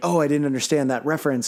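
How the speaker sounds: ordinary talk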